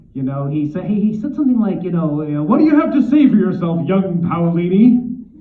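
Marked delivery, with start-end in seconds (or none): 2.5-5.0 glowering god voice, high and loud. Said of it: "glowers at me with this amazing voice".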